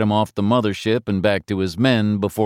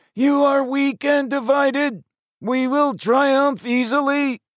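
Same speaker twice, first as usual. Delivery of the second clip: very high, tinny, croaking metallic voice. Narrator voices an alien egg addressing Earthmen: croaking metallic voice. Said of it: "replaced with a croaking metallic voice".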